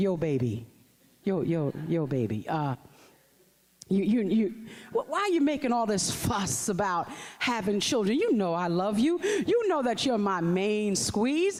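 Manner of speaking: deep put-on macho man voice. Imagining what he said to his partner, doing a deep manly voice. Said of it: "got real deep and said".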